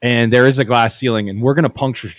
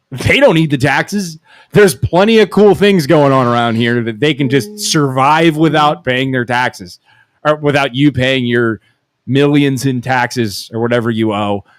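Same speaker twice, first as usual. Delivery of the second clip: plain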